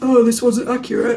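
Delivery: dim-witted, dopey put-on voice. Imitating a commenter complaining about the reading: dopey voice. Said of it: "in that dopey voice I just did".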